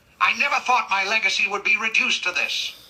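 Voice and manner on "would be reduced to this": ordinary talk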